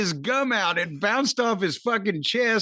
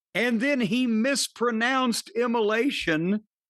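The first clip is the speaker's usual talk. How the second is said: ordinary talk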